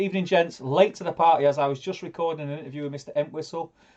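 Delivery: normal talking voice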